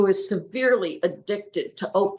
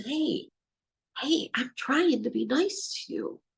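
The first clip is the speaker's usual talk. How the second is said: soft, high, gentle, trying-to-be-nice tone; 7 semitones higher, 5 dB quieter than usual. Imitating what someone says to you, with a put-on soft tone. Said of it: "they say it with the soft expression".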